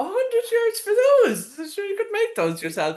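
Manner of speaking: scornful laughing, very high and swooping. Retelling scoffing at a seller's price: retelling laughing at someone. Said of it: "I started laughing at her, going".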